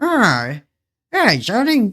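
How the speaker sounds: put-on very high, swooping, sing-song old man's voice. Describing how fans voice Gerson in their covers: old man Gerson voice. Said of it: "makes him out to be like".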